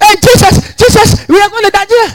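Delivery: mock alarmed, shrill, very high shouting. Retelling a wife's cry as a trailer came at them: imitating a wife shouting. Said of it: "The wife was shouting".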